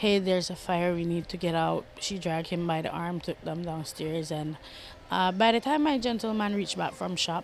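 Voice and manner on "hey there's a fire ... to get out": usual speaking voice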